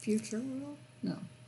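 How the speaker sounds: very quiet muttering and mumbling under the breath. Answering quietly to oneself during a theme park chat: mumbling to oneself. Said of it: "I'm mumbling".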